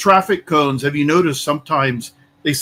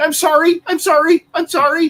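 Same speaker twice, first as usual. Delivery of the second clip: mock screeching woman's voice, much higher pitched; 12 semitones higher than usual. Retelling how a filming woman reacted when a baton was pointed at her, imitating a woman screeching. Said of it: "she immediately started screeching".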